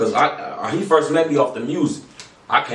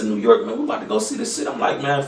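usual speaking voice

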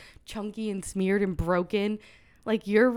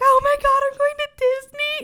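mock, very high, loud, tearful, overjoyed crying; 6 dB louder than usual. Retelling the monorail ride to a sister: imitating own past crying. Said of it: "crying on the monorail".

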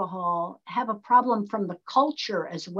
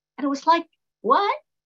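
normal talking voice

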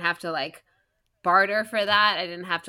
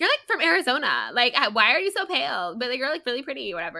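small, cute, pitched-up voice; 6 semitones higher than usual. Acting out a moment from Twilight, speaking to Bella Swan in a little Anna Kendrick voice. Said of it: "in her little like Anna Kendrick voice".

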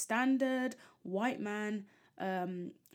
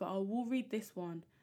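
normal talking voice

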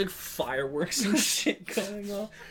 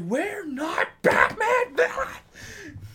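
mock panicked outburst, higher; 3 dB louder than usual. Mocking movie villains who insist they matter: imitating villains freaking out. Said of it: "freaking out".

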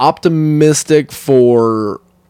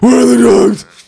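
high-pitched, loud, demanding tone; 11 semitones higher, 5 dB louder than usual.

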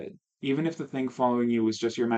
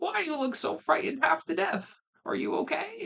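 put-on sweet elderly woman voice, very high and creaky. Reading a story, an old lady answers the door, old lady voice. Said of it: "I'm going to try to do an old lady voice".

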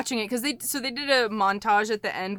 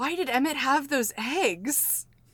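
faint, dying half-whisper, eggs drawn out; 4 semitones higher, 5 dB quieter than usual. Imagining a dying woman's last question, imitating a deathbed half-whisper. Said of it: "she just whispered".

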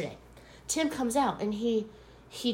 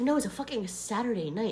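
plain

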